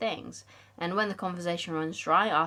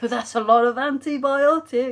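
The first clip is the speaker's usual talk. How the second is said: very loud, high-pitched comic blurt; 7 semitones higher, 10 dB louder than usual. Recalling an overheard phrase that became an inside joke, funny voice mimicking someone. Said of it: "in the funny voice and mimicking them".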